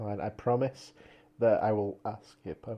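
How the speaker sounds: lifeless, very slow, dead-inside monotone drone. Promising to ask a writer onto the podcast, sounding dead inside. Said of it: "He sounds so dead inside!".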